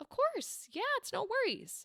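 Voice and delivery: polite, courteous customer-service voice. Recounting politely agreeing to a request to avoid confrontation, customer service voice. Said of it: "I will turn on my customer service voice".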